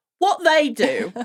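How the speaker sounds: put-on Cockney accent, up high. A speaker quotes Tom Bennett's line playing Ulf, in Tom Bennett's Cockney as Ulf. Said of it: "a Cockney".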